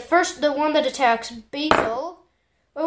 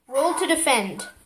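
normal talking voice

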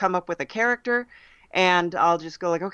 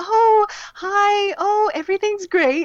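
super polite, ingratiating phone voice, very high; 4 dB louder than usual. Speaker describes a character picked up from watching their mom, imitating mom's polite phone voice. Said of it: "and that the phone voice kind of".

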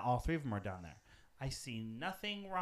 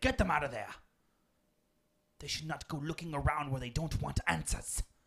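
put-on British accent. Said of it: "that was my British accent".

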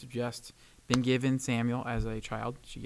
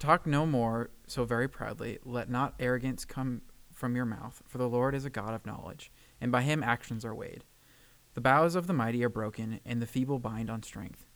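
usual speaking voice

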